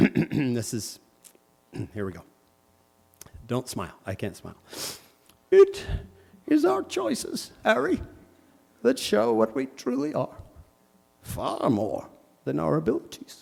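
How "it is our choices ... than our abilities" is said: put-on voice with swooping pitch and creaky rasp. Doing a favorite Harry Potter character impression: Dumbledore voice. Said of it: "I'd always do Dumbledore".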